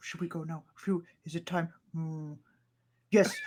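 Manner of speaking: hushed half-whisper, very quiet, barely audible. Narrating a scene, voicing creatures heard behind the group: half-whispering. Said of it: "you just hear this whispering behind".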